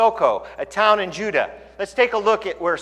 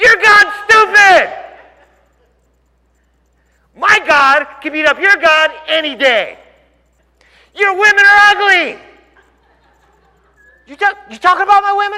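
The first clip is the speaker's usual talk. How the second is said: mock very high, shrill, loud, angry taunting; 11 semitones higher, 7 dB louder than usual. Retelling how ancient armies taunted each other: imitating angry taunting. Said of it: "all this crazy taunting".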